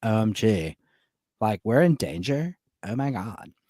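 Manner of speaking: low, creaky vocal fry dragged through every word. Describing how everyone in the movie talks, mimicking them: imitating vocal fry. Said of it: "they all talk with this, like, vocal fry".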